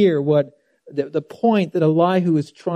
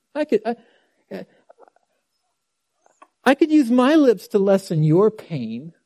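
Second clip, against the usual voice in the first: heavy dripping sarcasm, swooping and high; 6 semitones higher than usual. Reading a quoted line aloud again after pointing out its sarcasm: acting out dripping sarcasm. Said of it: "the dripping sarcasm?".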